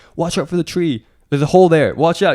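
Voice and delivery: urgent, loud, high shouting. Retelling how people behind the camera warned the runner: imitating people shouting. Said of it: "people shouting".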